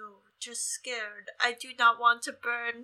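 put-on childlike baby voice, like a tiny child. Playing Quentin, asked whether he's mad, answering in a baby Quentin voice. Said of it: "is that your baby Quentin voice?".

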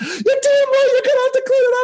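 shrill, very high-pitched scream. Retelling the graduate assistant answering a question: imitating someone screaming.

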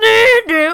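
high-pitched, loud mock yelping sound.

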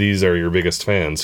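ordinary talk

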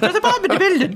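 mocking fake Irish accent. Retelling pub locals doing their impression of an irish person: imitating a bad irish impression. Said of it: "That was their impression of an Irish person".

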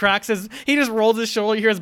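usual speaking voice

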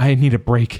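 trembling, breathy voice. A narrator reads Dia, overwhelmed by Alma's work on her, breathy and shaking. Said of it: "she breathed, and this time her voice shook".

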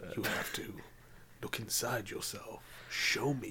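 hushed, deep sultry whisper, low and slow. Joking with a friend about Morpheus as a jazz man, doing a sultry Morpheus voice. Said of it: "he always talks really sultry".

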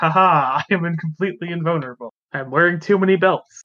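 put-on anime villain voice. Mocking an overconfident enemy by playing him: put-on anime villain voice. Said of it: "He's like an anime villain who's like".

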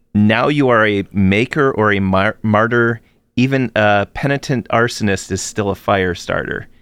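normal talking voice

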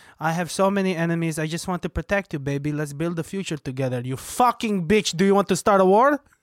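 put-on sweet Israeli-accented voice. Playing a man asking his partner for money, Israeli accent. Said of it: "You have a good Israeli accent".

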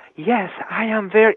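light, airy female voice. Demonstrating the voice put on for an audiobook's main narrator, breezy female voice. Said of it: "I'm switching my voice from this to".

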